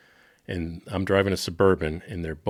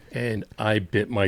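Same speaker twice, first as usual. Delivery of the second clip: usual speaking voice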